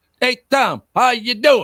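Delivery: very high, loud, over-projected drill sergeant cadence. A host mimicking how a guest from new jersey talks, over-projecting cadence. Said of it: "The over projecting cadence of the".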